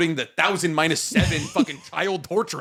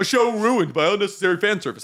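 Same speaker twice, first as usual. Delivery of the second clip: mocking, caricaturing, poking-fun put-on voice; 3 semitones higher than usual. Voicing what Fire Force haters say about the show, in a put-on voice mocking Fire Force haters. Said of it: "I don't know why I'm doing that voice for them".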